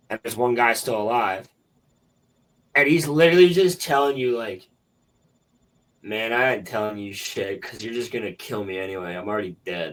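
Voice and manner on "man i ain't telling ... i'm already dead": mock resigned, indifferent, couldn't-care-less defiance. Retelling a doomed guard refusing to talk: imitating someone not caring. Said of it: "not giving a fuck".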